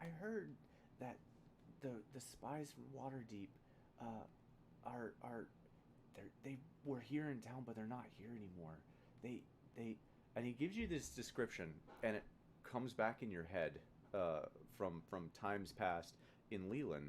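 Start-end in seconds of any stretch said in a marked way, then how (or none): 0.0-10.0 lowered, soft voice. Game master voicing a character who shares a rumor with a player, lowered voice. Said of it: "he kind of like lowers his voice".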